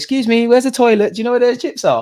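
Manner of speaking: exaggerated British accent. Joking to a man about talking to his girl, in an exaggerated British accent. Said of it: "don't sleep on the British accent".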